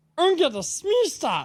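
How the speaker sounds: very high, loud, squeaky cartoon alien voice. Telling a story, the speaker recalls answering his daughter in a Stitch voice. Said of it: "Daddy, you sound like Stitch".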